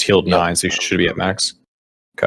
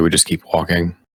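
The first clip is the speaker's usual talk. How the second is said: soft whispering; 3 semitones lower than usual. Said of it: "I whisper quietly".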